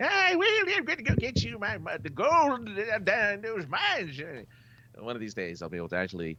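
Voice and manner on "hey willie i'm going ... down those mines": squeaky, very high gold prospector character voice. The speaker finally tries out a prospector impersonation, calling out to willie. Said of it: "my prospector impersonation".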